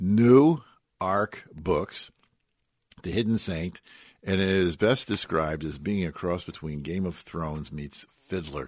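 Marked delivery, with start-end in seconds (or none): 0.0-2.1 slow, loud, measured, deliberate, word by word. Spelling out a publisher's name so it is not misheard: saying it slowly. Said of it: "I gotta say this slow".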